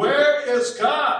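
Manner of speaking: very loud, high-pitched bellowing. A clergyman, getting no answer from the boy, repeats his question in a raised voice. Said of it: "raised his voice some more".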